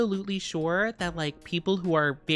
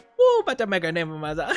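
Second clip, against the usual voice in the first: put-on Cajun accent, louder; 4 dB louder than usual. Quoting a favorite character's line from the game: Gambit's Cajun accent. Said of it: "the Cajun accent".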